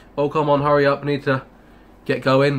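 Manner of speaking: normal talking voice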